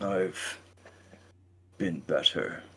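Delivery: soft, pained troll voice edged with near-disgust. Voicing a creature that was just greeted, pained, almost disgusted. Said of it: "You can hear pain, like almost like disgust".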